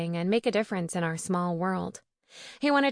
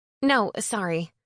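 plain

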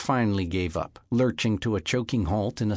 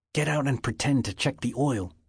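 urgent, pressing, much higher pitch; 4 semitones higher than usual. A man hiding by the roadside gives a woman instructions, urgent. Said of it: "sensing the urgency in Thomas Begay's voice".

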